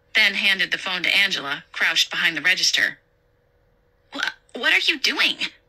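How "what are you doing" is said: insistent, very high pitched and drawn out. Handed the phone by Nina from behind the register, Angela is demanding. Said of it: "Angela demanded".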